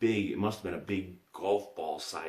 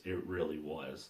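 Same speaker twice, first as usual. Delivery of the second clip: ordinary talk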